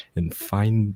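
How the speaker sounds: usual speaking voice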